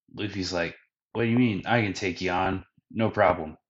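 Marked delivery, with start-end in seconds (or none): none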